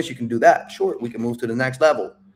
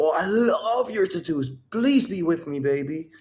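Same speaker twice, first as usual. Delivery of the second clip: overdone, laid-on exaggerated tone, pitched up; 7 semitones higher, 3 dB quieter than usual. Showing a listener how their compliment sounds to her, exaggerated tone. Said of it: "I'm making an exaggeration here... she hears it in your tone".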